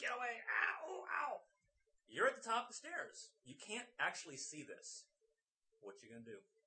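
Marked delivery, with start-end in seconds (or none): 0.0-1.4 very high, drawn-out, pained yelping cries. Narrating to the players, the speaker voices Seamus yelping and screaming. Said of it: "You hear him kind of yelping and screaming".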